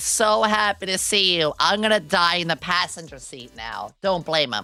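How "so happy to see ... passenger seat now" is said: ordinary talk, nothing marked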